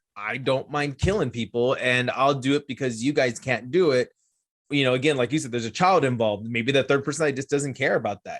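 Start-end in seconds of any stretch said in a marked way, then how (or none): none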